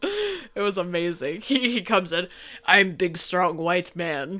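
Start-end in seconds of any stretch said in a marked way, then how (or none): 2.6-4.4 fake Russian accent, played up and exaggerated. Retelling how a character enters a fight scene: put-on Russian accent. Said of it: "I don't know why I put on a Russian accent".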